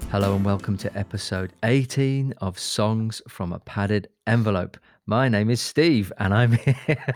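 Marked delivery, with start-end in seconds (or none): 5.1-7.1 loud, chuckling, laughing through every word. Introducing the show and the speaker's own name, laughing while talking. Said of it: "Why did I say it like that?".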